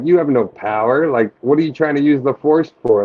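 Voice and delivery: ordinary talk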